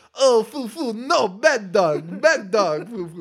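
put-on awful French accent, very slow, "foo" drawn out. Retelling a scene where Adley walks an invisible dog, in the worst French accent. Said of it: "the worst French accent I've ever heard".

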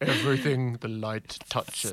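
deep booming put-on voice. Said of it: "James Earl Jones".

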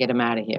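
hushed, half-whispered voice. Retelling a father's order to his men: imitating a half-whisper. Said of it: "told the guys in a whisper".

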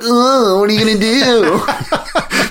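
silly, squeaky, very high taunting voice. One of the seals answers a threat to drag him out: imitating a goofy taunt. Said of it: "does some like goofy like".

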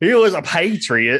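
put-on slow, drawling New Orleans accent. Repeating the other speaker's line back: imitating an accent. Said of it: "I love the fucking accent you just threw".

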